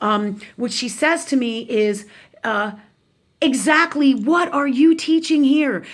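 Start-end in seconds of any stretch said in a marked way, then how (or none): 3.4-5.8 furious, demanding, angry yelling outburst. Retelling how an angry aunt yelled at the speaker: imitating the aunt yelling. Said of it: "she starts yelling at me and she says".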